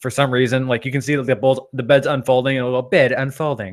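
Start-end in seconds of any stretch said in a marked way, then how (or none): 2.9-3.7 put-on androgynous English woman's voice. Imitating a bed announcing itself as it unfolds: androgynous English woman's voice. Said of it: "an androgynous, like, you know, English woman's voice".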